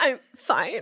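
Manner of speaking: fake cracking voice. Asked how bad things are, the speaker answers with a mock voice crack. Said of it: "Voice cracks".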